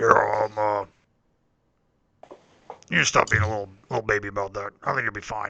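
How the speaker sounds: low grumbling voice. Voicing a character who tells a player to stop being a baby: low grumbling voice. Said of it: "a low grumbling and goes".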